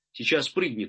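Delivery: ordinary talk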